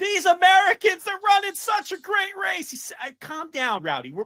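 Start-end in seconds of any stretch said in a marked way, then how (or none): 0.0-2.7 acted, thrilled announcer shouting, very high pitch. Imitating a swimming commentator during a long race: Rowdy Gaines excited screaming. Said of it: "Rowdy Gaines screaming at me".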